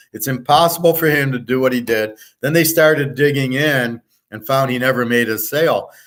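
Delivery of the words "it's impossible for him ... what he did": ordinary delivery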